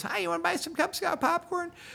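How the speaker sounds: very high squeaky voice with creaky edge. Retelling a gal offering Cub Scout popcorn, in a really squeaky voice. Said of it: "in the really squeaky voice".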